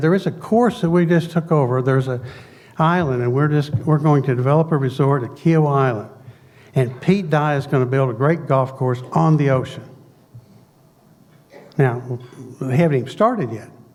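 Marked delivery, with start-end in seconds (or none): none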